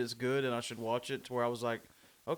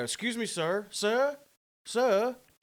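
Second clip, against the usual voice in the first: put-on British accent, very high-pitched, slow and drawn-out; 9 semitones higher, 4 dB louder than usual. Retelling a man in a busy crowd calling out to him, put-on british accent. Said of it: "I just gave him a British accent".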